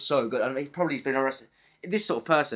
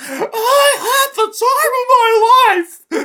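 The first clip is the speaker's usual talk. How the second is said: very high, very loud, very slow, drawn-out shriek; 10 dB louder than usual. Picturing a killer acting out a movie scene: imitating someone screaming. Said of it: "He's just screaming like".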